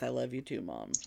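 very low, quiet muttering under the breath. Retelling a Christmas scene, imitating someone muttering under his breath. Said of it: "muttering under his breath".

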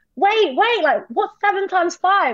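high, slowed, excited working-through tone.

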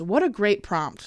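dry sarcastic tone. Introducing listener questions about birthdays: sarcastic. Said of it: "I was saying it sarcastically".

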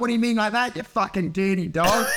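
usual speaking voice

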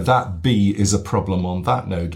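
ordinary delivery

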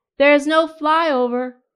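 loud shouting over noise. A man at the highway's edge answers a woman over the roaring traffic, yelling. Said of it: "yelled the man".

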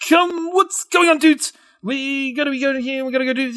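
very high-pitched, loud, babbling voice. Imitating a streamer who talks very fast: fast-talking xQc impression. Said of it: "He does talk very fast".

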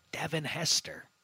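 sudden, hushed, breathy whisper. Tossing a player's name at a co-host in a football discussion, whispering. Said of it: "I don't know why I whispered it".

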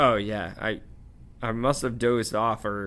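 plain reading voice

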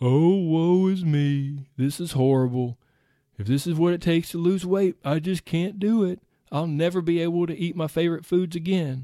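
mopey, gloomy, doom-laden donkey voice. Speaker acts out the brain's irrational reaction to dieting, Eeyore voice. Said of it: "insert the Eeyore voice now".

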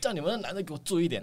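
put-on very high, loud, blustering yell. Retelling how a customer came in at midnight: imitating a loud shouting customer. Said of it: "他又大声嚷嚷说".

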